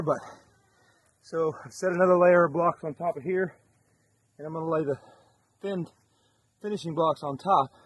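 slightly out of breath. Narrating block-laying work on a build, a little out of breath. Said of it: "A little bit out of breath there".

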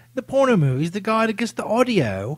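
put-on British accent.

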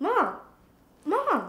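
loud shouting. Calling loudly into a room where a baby has just fallen asleep: shouting for mom. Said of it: "Calm your voice down".

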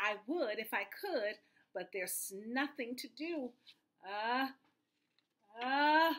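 ordinary talk

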